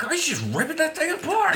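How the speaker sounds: high-pitched, laughing, freaking-out delivery.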